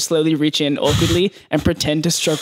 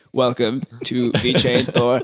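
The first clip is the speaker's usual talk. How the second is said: mechanical robot voice, lower; 5 semitones lower than usual. Describing an event's opening, imitating the robot voice that played. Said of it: "there was like a robot voice saying".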